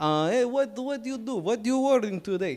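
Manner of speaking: put-on Middle Eastern-accented voice. Telling a story about a shoe repairman, imitating his Middle Eastern accent. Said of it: "he talks a little bit like this".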